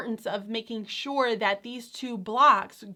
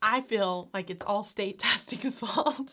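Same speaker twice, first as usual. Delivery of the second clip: speaking through laughter; 4 dB quieter than usual. Talking to an audience about teaching writing: laughing while talking. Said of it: "I couldn't say that without laughing".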